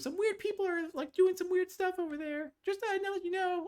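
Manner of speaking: put-on very high-pitched young girl character voice. Game master voicing a little girl character to the players, in a little girl voice. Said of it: "And she goes".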